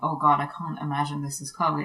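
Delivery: ordinary delivery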